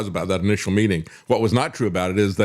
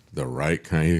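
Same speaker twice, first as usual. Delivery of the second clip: mock creepy way of speaking; 4 semitones lower, 4 dB quieter than usual. Retelling what was said at a lunch visit: imitating a creepy way of speaking. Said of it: "he said in a real creepy way".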